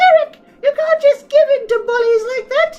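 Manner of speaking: squeaky character voice. Voicing the mother in a scene opposite Derek: squeaky voice. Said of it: "very straining to do squeaky voice for this long".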